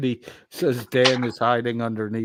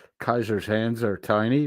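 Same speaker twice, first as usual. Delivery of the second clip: normal talking voice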